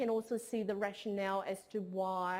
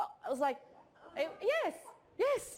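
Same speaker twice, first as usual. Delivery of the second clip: ordinary talk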